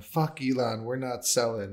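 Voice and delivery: mock shouting. Recounting a crypto stage event, acting out someone yelling on stage, retelling a yell. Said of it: "starts yelling".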